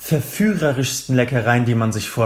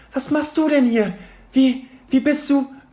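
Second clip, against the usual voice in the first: piercing, very high shriek; 14 semitones higher than usual. Hermine reacts to Harry's sudden arrival; shrieking. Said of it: "kreischte Hermine".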